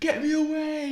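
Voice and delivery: mock shrill, very high, desperate screaming. Retelling a movie scene where Superman gets UV light: imitating Superman screaming.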